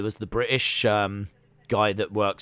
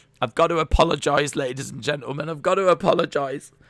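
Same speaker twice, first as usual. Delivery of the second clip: acted-out tearful, choked-up, high sobbing voice; 5 semitones higher than usual. Retelling a DJ apologizing to listeners, imitating someone sobbing. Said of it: "he's like sobbing and everything".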